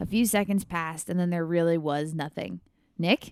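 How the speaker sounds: ordinary delivery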